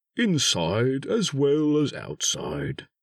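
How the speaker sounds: slow, pleased, proud tone. Arriving with a friend at another friend's house, remarking proudly. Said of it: "said Pooh proudly".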